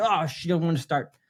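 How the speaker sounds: normal talking voice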